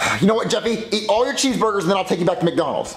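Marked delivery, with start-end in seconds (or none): none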